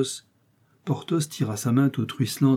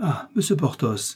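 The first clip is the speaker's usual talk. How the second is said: sudden exclaimed cry, called out; 4 semitones higher than usual. The procurator's wife, once sure no strangers are about, cries out to him. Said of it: "s'écria la procureuse".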